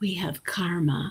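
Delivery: hushed, confiding, secretive whisper. Retelling what Deepak whispered in the speaker's ear: imitating Deepak whispering. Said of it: "whispering in my ear".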